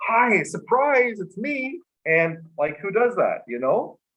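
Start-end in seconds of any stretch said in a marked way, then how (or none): 0.1-1.8 put-on excited voice, higher. Retelling how a visitor popped out from under the covers: imitating someone excited. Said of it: "And she was so excited".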